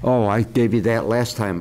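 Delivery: ordinary delivery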